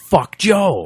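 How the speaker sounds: loud, high yelling shout. Recalling looking down at someone at a show, retelling a yell. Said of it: "I yell out".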